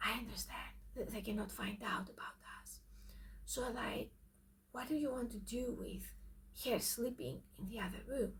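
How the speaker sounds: hushed, very quiet, breathy, barely-there whisper. Retelling how the speaker answers a whispering man by mirroring him, whispering. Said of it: "you also whisper to accommodate".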